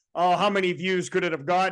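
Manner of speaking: normal talking voice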